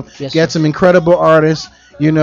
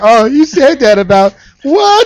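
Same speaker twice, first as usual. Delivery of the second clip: mock whiny, offended crying; 9 semitones higher, 3 dB louder than usual. Mocking listeners who get offended, imitating someone crying in offense. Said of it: "Motherfuckers be here crying like".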